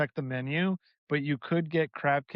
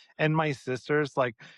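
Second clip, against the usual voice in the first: plain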